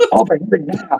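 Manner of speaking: put-on very high, shrill, overdramatic, urgent delivery. Retelling how another speaker demanded help while pounding the table: imitating a dramatic urgent demand. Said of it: "he was pounding on the table".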